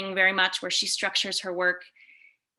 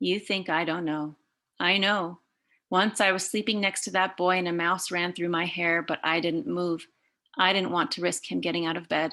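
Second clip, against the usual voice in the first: plain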